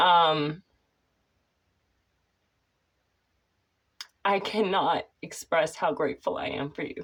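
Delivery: choked up, fighting tears, barely composed. Thanking admins for their support, holding back tears. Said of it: "I'm gonna have to compose myself".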